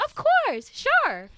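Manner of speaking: very high chirpy voice. Describing how people around them used to talk, imitating their high-pitched raised voice. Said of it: "raise up their voice a little and just talk talk like this".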